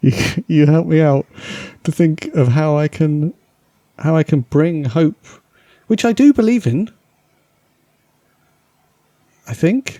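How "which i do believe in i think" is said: voice rising higher with swooping sing-song lilt. Speaking to two listeners you call cheery, voice going higher. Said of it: "Why did your voice just go higher there?".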